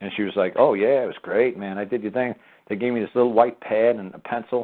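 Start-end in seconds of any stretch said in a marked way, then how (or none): 0.6-2.3 put-on stoner voice. Retelling what the wife said on the show, imitating a pothead. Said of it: "she sounded like a pothead".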